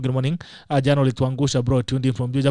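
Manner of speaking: usual speaking voice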